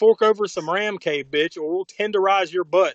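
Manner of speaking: ordinary delivery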